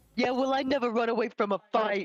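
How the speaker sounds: shouting in a put-on character voice. Voicing a character answering another character in a game: yelling in character. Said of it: "And I yell that at Casey".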